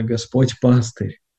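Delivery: slow, stress on пастырь in Господь пастырь. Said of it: "в следующем прочтении мы делаем ударение на".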